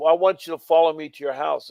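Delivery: normal talking voice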